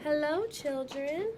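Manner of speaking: sugary, gentle, soft and sweet tone. Someone greets the children on returning, sweet voice. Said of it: "someone said in a sweet voice".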